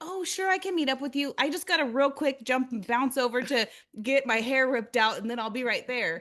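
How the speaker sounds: acted, breezy, casual, no-big-deal nonchalant tone. Imitating everyone she knows talking about hair removal: imitating a casual, nonchalant tone. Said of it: "Like, it's nothing".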